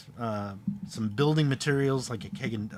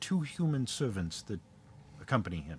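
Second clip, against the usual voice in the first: voice dropped even lower, hushed; 5 dB quieter than usual. The narrator voices Protheus speaking to the players, Protheus lowering his voice. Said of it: "he lowers his voice even further".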